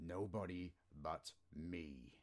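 growling, menacing, low, deep rumble. A voice answers an old man frozen in his bed, low and deep growl. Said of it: "The voice growled low and deep".

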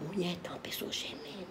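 hushed whisper.

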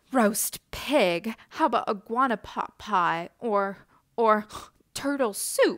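with a gasp. Reading a story, the pig answers the iguana's suggestion to roast him: gasping. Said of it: "Pig gasped".

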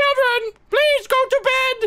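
very high, put-on motherly tone. Playing a mom telling the children to go to bed, in a mom voice. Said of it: "Use my mom voice".

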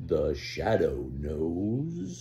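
very low, hushed, dramatic, drawn-out voice. Reading a story, [name] mimics the famous Sunday night radio broadcast: deep, dramatic Shadow voice. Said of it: "the deep, dramatic voice everyone knew from the Sunday night radio broadcast".

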